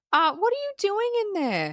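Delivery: put-on very high, swooping yell. Retelling a film scene where the mother calls through the door: imitating mother yelling. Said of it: "we hear her mother yelling".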